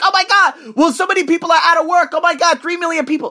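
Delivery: fake panic, squealed high.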